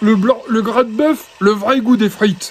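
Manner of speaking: put-on Ch'ti accent. Repeat what he used to say about his fries, in Jean-Paul Dambrine's Ch'ti accent. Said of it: "Il disait avec son accent de ch'ti là".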